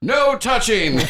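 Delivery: shrieking, very high, loudspeaker-like intercom scream. Voicing an intercom in a game scene: intercom screaming. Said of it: "an intercom just scream".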